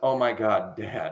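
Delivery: put-on disappointed groan. Retelling a son reacting to his father, imitating a disappointed son. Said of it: "so disappointed".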